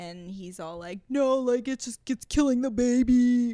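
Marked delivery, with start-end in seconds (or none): 1.1-3.6 put-on loud, forceful, insistent arguing voice, baby stretched. Retelling an argument about abortion, imitating Bartise's voice. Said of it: "In that voice, exactly".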